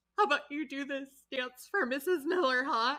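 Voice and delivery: choked-up, tearful wheedling. Retelling a coach pushing a dancer to perform, imitating someone choking up. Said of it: "while she's still, like, choking up".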